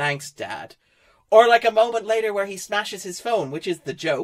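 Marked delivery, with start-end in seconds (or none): 0.0-0.7 put-on bored, flat voice, lower and quieter. Retelling an actor's line reading in a film: imitating David Harbour's disinterested voice. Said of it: "in the most disinterested voice".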